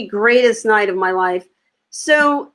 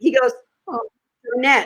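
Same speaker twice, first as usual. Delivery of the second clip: ordinary talk, nothing marked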